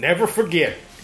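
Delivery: high, slow, stretched-out mock cowboy American drawl.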